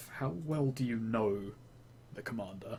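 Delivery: muttered under the breath. Asking a woman about the commander so he won't hear: said under the breath. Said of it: "say under my breath".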